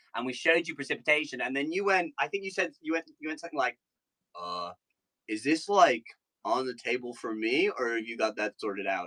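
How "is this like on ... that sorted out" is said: low-pitched, slow, unhurried delivery. Retelling what the other speaker once said downstairs in Boston: imitating a friend. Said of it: "That was an awesome impression".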